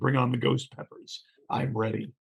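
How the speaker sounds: ordinary talk, nothing marked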